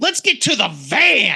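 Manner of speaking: slow, excited mock shout.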